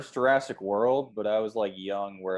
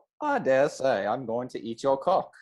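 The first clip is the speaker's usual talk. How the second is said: high put-on English accent, raptor creature voice; 5 semitones higher than usual. Showing how he talks, in an English accent. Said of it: "He has an English accent".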